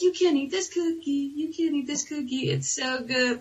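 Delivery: mock childish, high-pitched, taunting kid voice. Retelling how a kid at school teased about a cookie: imitating Zach taunting. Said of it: "him being like".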